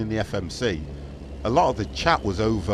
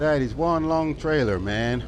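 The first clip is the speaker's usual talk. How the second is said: slow, fake, put-on American accent; 5 semitones higher than usual. Repeating a line about a long trailer: put-on American accent. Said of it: "That's my American accent, by the way, guys".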